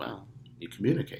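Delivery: ordinary talk, nothing marked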